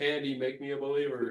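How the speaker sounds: high, loud screaming call.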